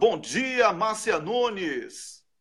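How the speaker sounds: high voice, word drawn out slowly.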